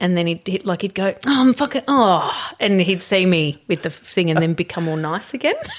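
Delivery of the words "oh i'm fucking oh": irritable, cranky grumbling, loud and drawn-out. Retelling how Alex reacted when filmed by surprise: imitating Alex being cranky. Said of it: "he always was really cranky".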